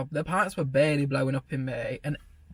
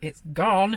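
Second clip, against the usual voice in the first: mock, loud, raised calling-out shout; 4 semitones higher, 3 dB louder than usual. Retelling trying to get a coworker's attention over noise: imitating own shout. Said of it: "Trying to, like, shout at her".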